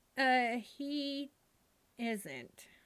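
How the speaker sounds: dark, ominous, foreboding tone. Answering whether Uncle Murray is here: ominous. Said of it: "you said that in a kind of onim-, ominous way".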